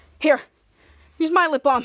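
ordinary talk

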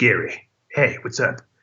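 deep suave confident voice. A voice actor asked about his character in an interview; deeper suave Gary voice. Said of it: "A little bit deeper, a little bit, I don't know, just more suave".

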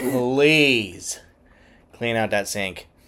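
very slow, acted exasperation, please drawn out. Retelling his partner's request to clean the sink: imitating an exasperated eye-roll request. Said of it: "she did the eye roll and everything".

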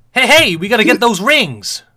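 really upbeat, high, loud, jolly hero voice.

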